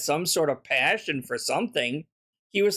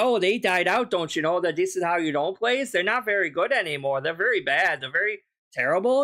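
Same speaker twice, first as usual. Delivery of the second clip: put-on mock Canadian accent. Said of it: "I'm not sure why I went for Canadian there".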